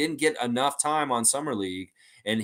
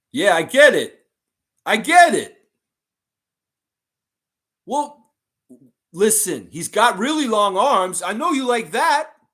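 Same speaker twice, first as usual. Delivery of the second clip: put-on very loud, heavy, strong Philadelphia accent; 9 semitones higher, 9 dB louder than usual. Doing an impression of the listener pitching a trade to the front office, strong philly accent. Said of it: "an impression of you with a strong Philly accent".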